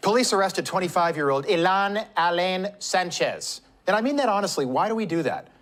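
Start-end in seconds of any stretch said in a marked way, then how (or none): 0.0-3.6 newscaster voice shifting into a polished Spanish accent.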